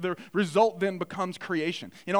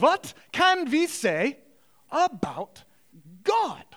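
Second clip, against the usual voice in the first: pitched-up, put-on German accent; 6 semitones higher than usual. Quoting him asking the silent students the question again, in a german accent. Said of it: "in German accent, I'm going to do my best".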